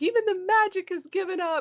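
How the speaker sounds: high, loud, despairing cry.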